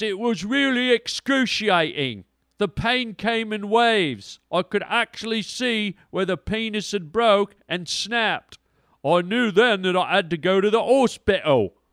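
put-on English accent. Telling a joke, the speaker voices a man describing his injury, keeping it going. put-on english accent. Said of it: "I'll do the English accent just to keep it going".

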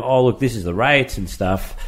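ordinary delivery

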